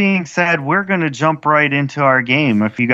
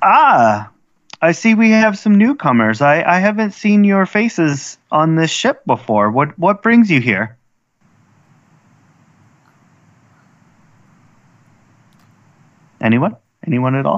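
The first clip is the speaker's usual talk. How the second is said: put-on teenage girl character voice; 2 semitones higher than usual. Game narrator voicing a girl who greets newcomers on a ship, teenage girl voice. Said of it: "a particular younger girl, probably in her t- late teens".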